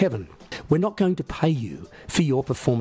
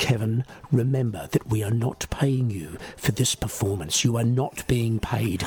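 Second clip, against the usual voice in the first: slow, deliberate, steady, even-keeled stern voice; 3 semitones lower than usual. Describing a stern man who addresses Kevin before every performance, slow, steady voice. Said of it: "say in a slow, steady voice".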